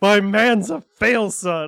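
very loud, high, yelled outburst. Recapping an episode, the speaker repeats what they yelled out loud, retelling a yell. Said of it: "this is just what I yell out loud".

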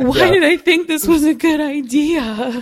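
loud, high, slow tearful wail, "idea" drawn out. Recalling lying in bed exhausted on a trip's first day, imitating themself crying. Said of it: "And I was laying in our bed crying".

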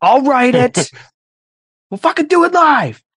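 mock yelling. Retelling a newscaster yelling at staff: imitating someone yelling. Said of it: "he just started yelling".

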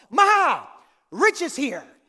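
very loud, very slow, drawn-out bellowed scream. Acting out a man screaming before he gets into the house: retelling a scream. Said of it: "He's already screaming before he gets into the house".

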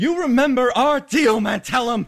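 shrill, loud, very high in-character shout. Voicing a character who takes aim at the dais: shouting in character. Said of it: "he shouts out".

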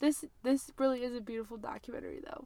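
crying while speaking. A podcast host talking with her co-host, crying. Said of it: "I'm sorry that I'm crying".

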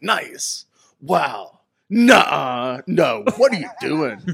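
very slow, loud, drawn-out, spaced-out delivery. Retelling how his wife imitates his reactions while watching wrestling: imitating wife's impression of him watching wrestling. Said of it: "My wife does a great impression where she's like".

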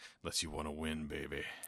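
low, soft, smooth cool-guy purr.

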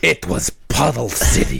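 put-on raspy showman voice.

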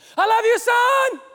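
loud, very high, very slow drawn-out yell. Retelling what he yells out the car window at his son: imitating his own yell. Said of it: "sometimes I'll yell out my window".

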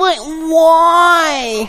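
put-on high screechy whiny ten-year-old girl voice, "why" drawn out. Recalling a girl's reply to everything said, imitating a screechy whiny girl. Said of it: "This screechy 10-year-old girl whiny voice".

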